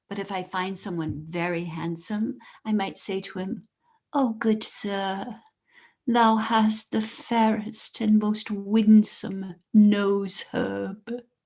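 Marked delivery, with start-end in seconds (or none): 4.1-11.1 archaic, formal put-on olde English accent. Demonstrating how to compliment a handsome man at the fair, olde English fair speech. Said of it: "No one is allowed to speak in modern English or an American accent".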